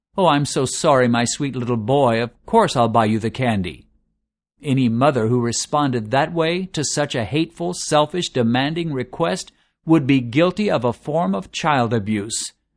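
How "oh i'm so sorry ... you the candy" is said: mock-apologetic tone, much lower. Acting out how a mother might answer her son's demand, in a mock-apologetic tone. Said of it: "said in an apologetic tone".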